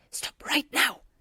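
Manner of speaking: furious, high-pitched, angry hissing voice. Reading a story aloud, a boy stops an elf: furious hiss. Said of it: "he hissed furiously".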